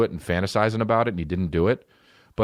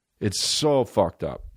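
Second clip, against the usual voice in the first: ordinary delivery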